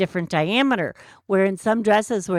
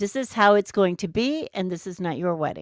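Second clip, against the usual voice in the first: ordinary talk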